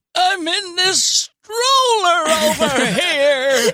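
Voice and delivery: put-on old man voice, drawn out. A baby in a stroller calls out to the others, talking like an old man. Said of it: "Why is that baby talking you like an old man?".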